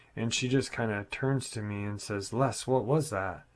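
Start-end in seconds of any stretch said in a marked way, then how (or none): 2.3-3.4 mock alarmed, frightened and panicked. Retelling what a little sister asked at the window: imitating a panicked voice. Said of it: "in a panicked voice".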